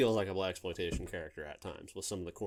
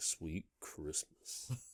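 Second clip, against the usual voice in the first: laid-back, cool, breathy near-whisper; 3 semitones lower, 8 dB quieter than usual. Showing how to say Sweet Christmas: cool delivery. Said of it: "you just got to say it cool".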